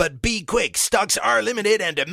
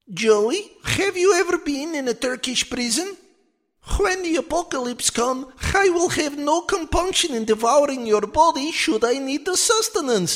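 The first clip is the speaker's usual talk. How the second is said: higher put-on Russian talking doll voice; 10 semitones higher than usual. Presenting a talking toy doll of a footballer: Andrei Arshavin doll voice. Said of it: "he talks, he sings with all your favorite Arshavin sayings".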